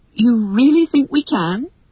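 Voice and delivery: doubtful, hesitant. Reading a story, Wendy answers being told she can fly: uncertain. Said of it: "asked Wendy uncertainly".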